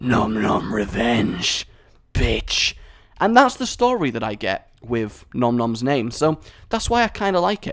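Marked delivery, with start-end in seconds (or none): 0.0-2.7 deep, low, slow, demonic rasping voice. Imagining a monster bursting through your wall, Nom Nom speaks: demonic, gravelly voice. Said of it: "he says in like this demonic, gravelly voice".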